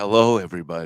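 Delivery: asmr-style voice. Greeting everybody one morning while down with flu, in an ASMR voice. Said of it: "I guess I'm gonna have to do A S M R voice this morning".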